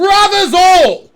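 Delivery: ear-splitting bellow, shrill, very loud and high. A figure suddenly turns and calls out right in your ear, loudest voice possible. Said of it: "like the loudest voice possible, right in your ear".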